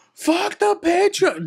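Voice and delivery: acted, very high, shrill, loud screaming. Retelling a man in the back who kept screaming: imitating someone screaming. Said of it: "he's screaming so much".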